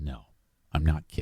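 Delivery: put-on flat monotone. Retelling a story and quoting Gary's reply, imitating Gary's monotone. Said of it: "he's real monotone".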